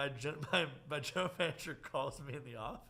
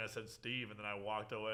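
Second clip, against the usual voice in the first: ordinary delivery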